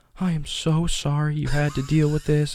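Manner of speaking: put-on high, slow, tearful voice, breaking down. Retelling what a crying teacher said after a complaint: imitating a crying teacher. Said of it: "she started breaking down and crying".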